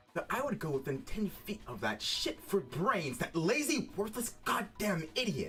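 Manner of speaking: very high, raging, furious rant, put-on. Trying out a game character's angry line: repeating a game character's furious outburst. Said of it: "I wanna try this line real quick".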